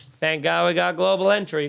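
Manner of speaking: usual speaking voice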